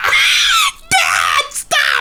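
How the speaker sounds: put-on shrill, high child's voice, yelling.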